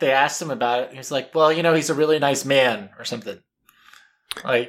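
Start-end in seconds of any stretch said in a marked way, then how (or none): none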